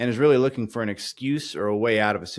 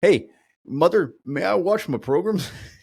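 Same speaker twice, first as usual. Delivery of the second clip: put-on, higher-pitched old man voice; 7 semitones higher, 4 dB louder than usual. Picturing an old man asking his wife for a TV show: ninety-two-year-old man voice. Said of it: "made me think of a ninety-two-year-old man asking his, uh, wife".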